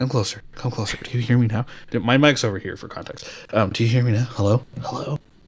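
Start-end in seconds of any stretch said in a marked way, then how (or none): 3.7-5.2 put-on ghost voice. Calling out over the mic as Bray Wyatt's ghost. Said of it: "somehow Bray Wyatt's ghost appears".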